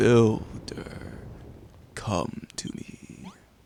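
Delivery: eerie ghostly voice, very slow and drawn out. A mysterious voice calls out to the Builder, spooky voice. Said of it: "What the heck was that spooky voice?".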